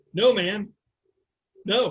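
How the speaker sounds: acted sarcastic tone. Describing a game character's reaction, acting out a sarcastic refusal. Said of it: "he looks up and sarcastically".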